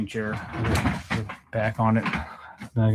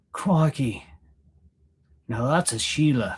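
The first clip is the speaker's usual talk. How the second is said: bad, drawn-out put-on Australian accent; 3 semitones higher than usual. Joking about a fan favorite Crocodile Hunter: terrible Australian accent. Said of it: "That's a terrible, uh, Australian accent".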